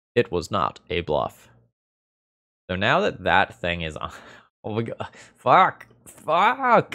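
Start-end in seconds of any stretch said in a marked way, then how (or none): 0.2-1.5 dramatic, documentary-style narrator voice-over. Commenting on a game to viewers, the speaker switches to a narrator's voice. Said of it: "Narrator's voice".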